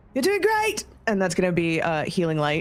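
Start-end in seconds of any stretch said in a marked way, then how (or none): 0.2-0.9 very high cheer, called out across distance. Voicing a character who calls out to an ally: calling out to someone. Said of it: "calls out".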